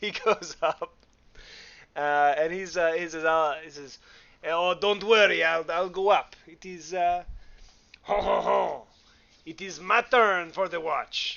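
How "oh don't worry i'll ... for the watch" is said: put-on French accent. Telling a story, quoting what another person said, in a French accent. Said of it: "that's the last French accent I'll do".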